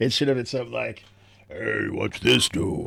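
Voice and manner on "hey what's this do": slow, creaky, rough, lumbering, drawn-out voice. Showing how a game character should have sounded: Andre the Giant voice. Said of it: "Like you're Andre the Giant".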